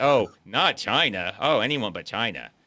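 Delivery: mock, acted-out sarcastic delivery. Explaining how he says the line, mock-sarcastic retelling. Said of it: "the way he says it, it seems like he's being sarcastic".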